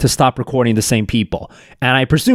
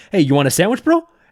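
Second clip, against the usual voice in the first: acted, patronizing, condescending, high toddler-talk voice; 5 semitones higher than usual. Imitating a man offering sandwiches to homeless men: imitating a patronizing tone. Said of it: "the patronizing tone".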